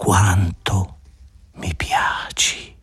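fading, swooning voice, words drawn out with delight. Stroking a man's hair, a woman speaks to him in a voice dying with delight. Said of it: "con una voce morente di delizia".

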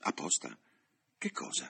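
plain reading voice

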